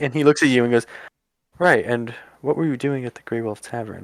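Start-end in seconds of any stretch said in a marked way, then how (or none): 1.6-4.0 hushed whispering, slower. Narrating a game scene, a character questions the player, whispering. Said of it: "he's really whispering now".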